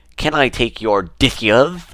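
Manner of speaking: loud cartoon duck voice, played for laughs. Retelling asking people for their dishes: Daffy Duck voice. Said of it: "There was a Daffy Duck accent".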